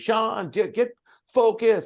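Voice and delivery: high, drawn-out yell from the sidelines. Retelling a woman who yells at you during your tennis game, imitating someone yelling. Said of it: "she's yelling at me".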